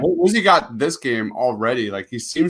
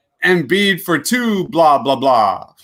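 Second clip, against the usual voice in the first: put-on vampire voice, higher, louder, slower; 3 semitones higher, 4 dB louder than usual. Showing how to call an Embiid bucket, speaker does the Dracula voice. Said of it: "you gotta do the Dracula voice".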